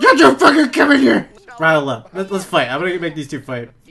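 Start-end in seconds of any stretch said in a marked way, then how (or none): 0.0-1.3 very high, shrill, very loud angry shout. Voicing a game character told to yell at a visitor: yelling at someone. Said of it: "yell at him for no reason".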